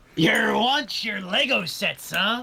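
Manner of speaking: very high, very slow, loud, drawn-out pirate voice. Picturing a toy shop clerk as a pirate, asking about Lego sets: imitating a pirate. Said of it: "I'm picturing it as, like, a pirate".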